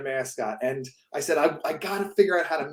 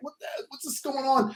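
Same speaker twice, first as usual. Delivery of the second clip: put-on high, upset child's voice on the verge of tears; 9 semitones higher, 4 dB quieter than usual. Retelling being scared by a mascot as a kid: imitating own childhood upset crying. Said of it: "getting all upset and crying".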